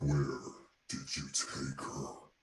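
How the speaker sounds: menacing, scary monster voice. Voicing a growling creature speaking inside a character's head: scary creature voice. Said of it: "that is a scary voice".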